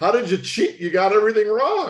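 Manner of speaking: talking through laughter. Retelling a cheating confession's reaction: imitating Mister Winter laughing while talking. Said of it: "He started laughing, you know, how he goes".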